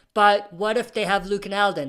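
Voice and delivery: ordinary talk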